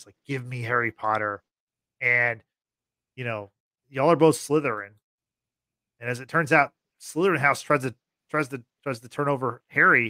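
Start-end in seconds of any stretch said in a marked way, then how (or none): 0.3-1.4 hushed half-whisper, projected to be heard widely. Retelling how Voldemort speaks to everyone: imitating Voldemort's half-whisper. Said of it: "this, like, whisper, and he's like".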